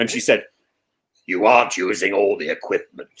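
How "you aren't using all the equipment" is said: put-on very deep voice, lower. Retelling what the head teacher said in her office: imitating a very deep voice. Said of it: "she had a very deep voice".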